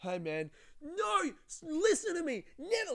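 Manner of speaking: very high-pitched yelling rant, swooping and rising. Retelling an Uber ride as another rider gets in, imitating Blake yelling. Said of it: "continued yelling".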